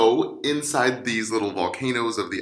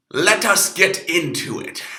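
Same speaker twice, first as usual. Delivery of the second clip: put-on pirate talk, higher and louder; 7 semitones higher, 5 dB louder than usual. Opening a pancreas lesson dressed in a pirate costume: pirate voice. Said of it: "hope you like my pirate costume".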